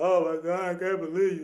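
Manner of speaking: acted tearful outburst, sobbing through the words. Retelling crying at the airport: imitating own crying. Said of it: "I was snotting and sneezing".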